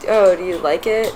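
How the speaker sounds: ordinary delivery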